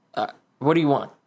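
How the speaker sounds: slightly nervous, uneasy, hesitant tone. Game master voicing a man confronted by the players: a little nervous. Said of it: "He looks a little nervous".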